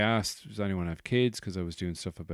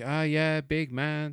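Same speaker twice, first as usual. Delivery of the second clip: slow, jokey, half-teasing, half-barbed, with venom; 7 semitones higher than usual. Retell what a man's wife said to you, imitating someone half jokey, slightly venomous. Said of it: "halfway between a sort of a ribbon, sort of jokey, but there was a little bit of venom".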